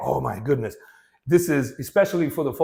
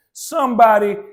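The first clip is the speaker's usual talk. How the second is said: some made prominent in somebody; 6 semitones higher, 8 dB louder than usual. Explaining options for stressing words like somebody: stress on some in somebody. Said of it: "you may put the emphasis on some".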